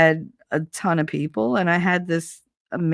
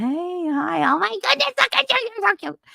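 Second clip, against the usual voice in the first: very high, gushing pet-talk voice. Showing how greetings to every animal start: imitating talking to an animal. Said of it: "that's how I talk to every animal".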